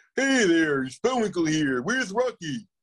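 goofy, high-pitched old-time cartoon voice. Speaker looking through his cartoon voices, picks one: goofy cartoon voice. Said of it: "what cartoon voices".

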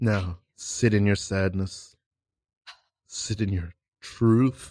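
put-on dramatic improv teacher voice. Playing a dramatic improv teacher coaching a scene: imitating a dramatic improv teacher. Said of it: "Was that an impression of, um, the teacher from your class".

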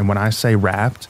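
plain

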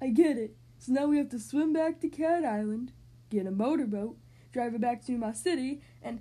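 loud, happy, eager babbling on and on. Reading a story aloud, Killer the cat answers Tersilla, babbling.

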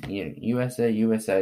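ordinary delivery

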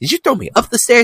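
very high-pitched, stunned, disbelieving tone. Retelling a film scene where a vampire throws him upstairs: imitating stunned disbelief. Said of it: "he just is, like, stunned".

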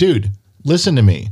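ordinary delivery

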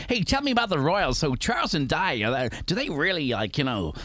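put-on American accent on every word. A London-born speaker recalls what Americans always asked, imitating an American accent. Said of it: "Is that your American accent?".

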